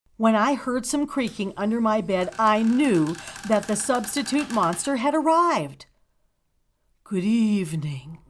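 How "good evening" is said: breathy, low-pitched voice. Narrator reads the substitute monster's first greeting from under the bed: low, breathy voice. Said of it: "said a low, breathy voice".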